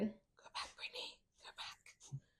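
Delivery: barely audible, breathy whisper. Joking about what she says now: mock silent whisper. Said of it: "now I'm silently whispering".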